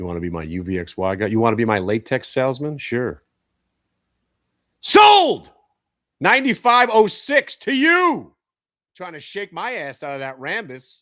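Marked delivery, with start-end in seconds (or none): 4.8-8.3 full-volume bellow, very high, very slow, drawn out. Trader announcing a stock sale to a buyer, loud yell. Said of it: "Sorry, I just yelled".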